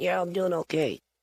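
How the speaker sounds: far-off ventriloquist voice. A ventriloquist shows how to throw the voice, the puppet answering: thrown voice, sounding far away. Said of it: "So it just sounds like it's it's far away".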